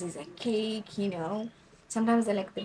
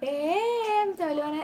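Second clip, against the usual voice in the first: shouting, higher and louder; 8 semitones higher, 5 dB louder than usual. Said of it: "you did hear her from the other room".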